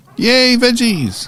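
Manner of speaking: loud, very high, slow squeal of joy. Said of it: "Sorry, that was loud".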